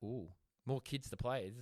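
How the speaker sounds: ordinary delivery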